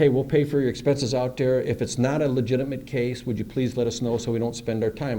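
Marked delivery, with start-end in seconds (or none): none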